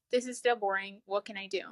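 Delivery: ordinary delivery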